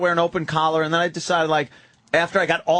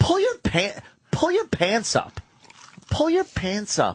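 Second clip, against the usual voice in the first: high, mock tone dripping with disgust; 5 semitones higher than usual. Retelling what someone told a guest to do: imitating a disgusted tone. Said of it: "It was the tone of voice was disgust".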